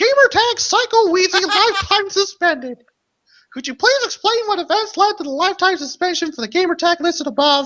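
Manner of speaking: very high, squeaky cartoon voice. Reading out a gamertag suspension notice: Mickey Mouse voice. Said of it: "I want to do the Mickey Mouse voice".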